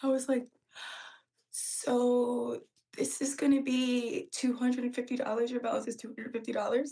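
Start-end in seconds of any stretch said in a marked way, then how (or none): 1.5-6.9 trembling, nervous, shaky, scared voice. Telling about giving a client her total; retelling a shaky, scared voice. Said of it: "I said it with the shakiest voice".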